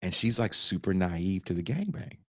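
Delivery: ordinary talk, nothing marked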